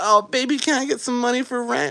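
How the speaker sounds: put-on very high-pitched grandmother voice. Imagining a grandma asking for rent money: imitating grandma. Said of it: "she's like".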